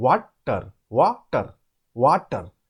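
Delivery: water broken into two syllables. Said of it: "we have to break it into two parts. See, like that".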